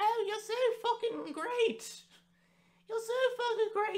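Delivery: very high voice, cracking and breaking on words. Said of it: "my voice cracked a lot doing that".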